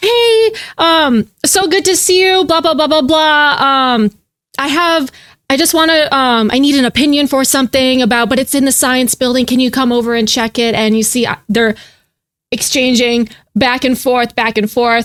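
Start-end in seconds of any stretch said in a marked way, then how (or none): 0.0-10.8 sweet, chatty, all-friendly put-on small-talk tone. Acting out Jade greeting another girl with a request, all smiley and friendly. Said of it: "Jade is like all smiley and friendly".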